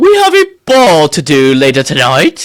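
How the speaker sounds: put-on period-drama voice. Imitating how the other speaker just sounded: Bridgerton-style voice. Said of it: "time jumped back to Bridgerton time".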